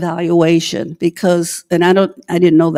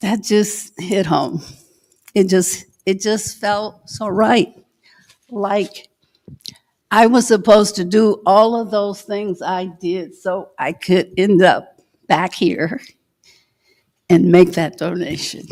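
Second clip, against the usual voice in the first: emotional, heartfelt, moved, speaking from the heart. Speaker recalls making a donation to the Broward County Library, getting emotional. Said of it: "I'm sorry I'm getting emotional about it".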